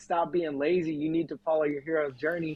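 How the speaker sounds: put-on yelling voice. Retelling what a mentor said when he yelled: imitating someone yelling. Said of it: "started cussing me out".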